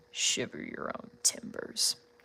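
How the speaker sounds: deep, rough voice, dropped as deep as possible. Testing whether you can get deep enough for a character: deep Heatwave voice. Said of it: "Let me see if I can get deep enough".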